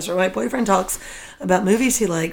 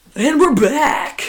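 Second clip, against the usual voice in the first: loud, pitched-up radio DJ announcer voice; 6 semitones higher, 5 dB louder than usual. Podcast co-host opening a new episode, announcing the return in a dj voice. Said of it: "I hate your DJ voice".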